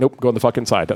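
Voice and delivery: ordinary talk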